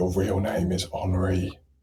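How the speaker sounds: soft, hushed half-whisper, close in. A player's character casts a message spell into a departing character's ear, half-whispering. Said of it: "kind of whisper into his ear".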